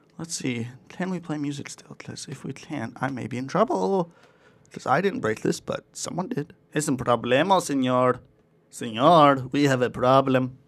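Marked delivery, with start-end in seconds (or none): 6.7-10.5 slow, unhurried put-on Spanish accent. Speaker, unsure whether music can still play, says this in a Spanish accent. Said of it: "Sorry to do that accent".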